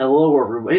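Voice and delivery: put-on mixed American accent. Describing how foreign comedians fake American accents, in a fake Southern-Eastern American accent. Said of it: "mix between Southern and kind of Eastern accent".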